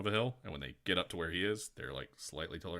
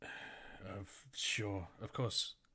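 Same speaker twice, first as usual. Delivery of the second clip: hushed, soft, put-on French accent; 2 semitones higher, 5 dB quieter than usual. Voicing a character in the group's story, with Frisidna's French accent. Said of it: "I gave her the French accent".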